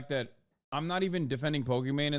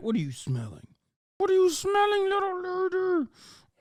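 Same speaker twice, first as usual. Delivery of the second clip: very high, sing-song pet talk voice; 3 dB louder than usual. Speaker on a microphone shows the voice used with the dog: voice for talking to dog. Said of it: "my dog voice".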